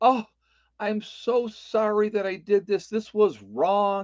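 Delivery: mock weepy, sobbing, tearful blubbering crying voice. Mocking a man's public apology, mock crying. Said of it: "comes on there crying like a little girl".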